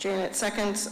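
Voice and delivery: ordinary talk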